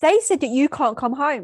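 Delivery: loud, upset angry little-kid voice, acted out. Retelling telling her mum she can't come home, imitating a little kid telling someone. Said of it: "I say it like a little kid telling someone".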